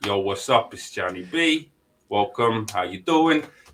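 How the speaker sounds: put-on New York mob-style accent. Imitating a wife's dad who sounds like he's from The Sopranos: imitating father-in-law's New York accent. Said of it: "he sounds like he's from The Sopranos".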